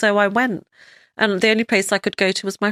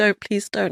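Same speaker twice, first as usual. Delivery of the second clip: put-on voice, spoken very quietly. Retelling a plea to a dog not to bark: imitating saying it very quietly. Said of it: "I was almost saying it very quietly".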